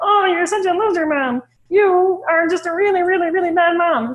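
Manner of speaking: high, silly cartoonish voice. Showing the silly voices technique on a shaming thought: Pee Wee Herman voice. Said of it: "Pee Wee Herman voice or something like that".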